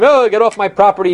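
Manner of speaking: angry but light tone. Recounting Beilis chasing 12-year-old boys off, imitating Beilis yelling angrily. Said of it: "came out yelling at them".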